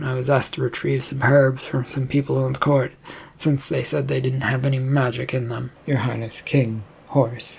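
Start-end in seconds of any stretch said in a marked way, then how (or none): none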